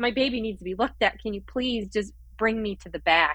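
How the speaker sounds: put-on crying while pleading. Holding her baby at the hospital, the speaker retells pleading while crying. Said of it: "And I'm like crying".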